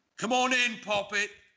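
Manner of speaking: very high, cawing crow voice. A game master voices a crow calling to Tyrrhenius, in a cawing crow voice. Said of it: "the caw of his crow".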